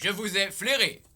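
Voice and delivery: robot-like speaking voice. A character replies to a stranger who greeted him, in a robot voice. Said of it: "il a une voix de robot".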